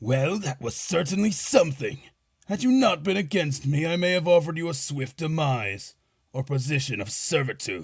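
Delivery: smug, arrogant, amused, haughty, taunting sorcerer voice. Narrating a battle, the storyteller voices the sorcerer addressing the heroes: arrogant sorcerer voice. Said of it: "The sorcerer smirks from his throne and chuckles in arrogance. / The sorcerer smirks from his throne and chuckles in arrogance. / [name], Varis, and Emile versus the Revived Sorcerer. / The sorcerer s".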